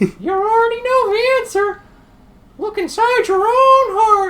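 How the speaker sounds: chirpy cartoon mouse voice, "heart" stretched out. Voicing a game scene, answering a question about Riku and Kairi, in Mickey Mouse voice. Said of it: "am I doing the Mickey Mouse voice".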